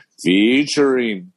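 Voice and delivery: made-up, put-on tv announcer voice. Showing the made-up announcer voice for the show's opening: announcer voice with Don Pardo vowels. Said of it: "I put Pardo in featuring".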